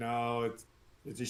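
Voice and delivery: put-on rural country-accent voice. Voicing a giant woman named Ragna: country accent. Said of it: "a country accent".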